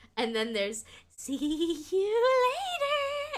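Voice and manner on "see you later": put-on very high, creepy, breathy little-girl voice. Quoting another fairy on the cursed farm: creepy breathy little-girl voice. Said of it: "And it's just as bad".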